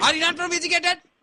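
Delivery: high, loud, outraged, scandalized mother voice.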